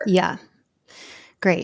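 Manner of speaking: very sarcastic, heavy sarcasm. Reacting to news that makes prosecution harder: very sarcastic. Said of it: "very sarcastically, I'm saying great".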